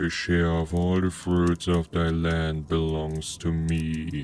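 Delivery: low, rumbling monster-like voice. Narrator voicing a creature that frightened him, in a deep, rumbling voice. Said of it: "it said in a deep, rumbling voice".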